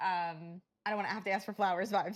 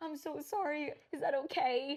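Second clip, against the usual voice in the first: mock timid, scared-sounding voice; 7 semitones higher than usual. Describing how friends now act around a friend, imitating a scared apology. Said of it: "Like I'm scared".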